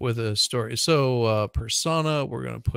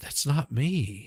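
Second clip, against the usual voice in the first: put-on soft, sultry voice; 3 semitones higher than usual. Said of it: "this very soft, sultry voice".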